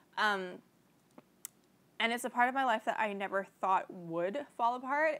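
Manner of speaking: tearful, on the verge of crying. A YouTuber talks to camera about a painful loss, on the verge of tears. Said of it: "I'm about to cry".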